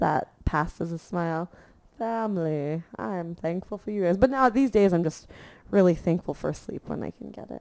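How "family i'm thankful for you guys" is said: grudging, forced, squeezed through clenched teeth. Speaker acting out thanking their family while growing up, through gritted teeth. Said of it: "I said it like through gritted teeth".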